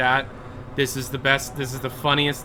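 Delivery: normal talking voice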